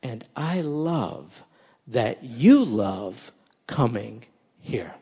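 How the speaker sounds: put-on whisper. Retelling own reply to the young man, imitating a whisper. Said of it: "And I whispered in his ear".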